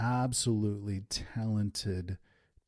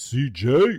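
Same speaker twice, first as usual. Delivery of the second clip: very loud, big booming shout; 4 semitones higher, 10 dB louder than usual. Retelling how a guy at the shop shouted a young worker's name, big booming voice. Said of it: "in this kind of big booming voice".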